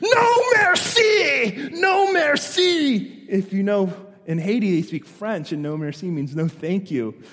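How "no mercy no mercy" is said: put-on very high, very slow drawn-out scream. Retelling a missionary shouting at a local in Haiti: imitating someone screaming. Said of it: "I hear in the back this screaming".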